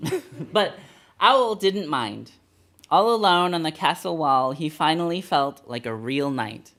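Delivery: ordinary delivery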